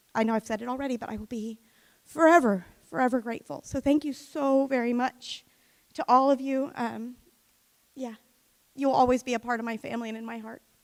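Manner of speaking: tearful voice, crying through the words. Thanking everyone and saying they'll always be family, crying while speaking. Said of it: "Now we're all, like, crying up here".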